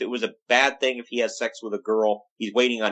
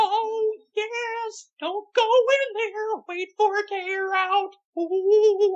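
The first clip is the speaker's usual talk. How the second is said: very high, slow, creepy cartoon-mouse voice. Continuing the Paul Bearer impression: really horrible Mickey Mouse voice. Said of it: "doing a really horrible Mickey Mouse".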